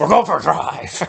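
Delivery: mock hostile, aggressive, rough-edged, no-nonsense tone. Retelling a scene where he turns to Harris: imitating an aggressive line. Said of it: "he very aggressively turns around to Harris and says".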